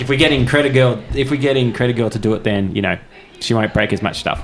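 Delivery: plain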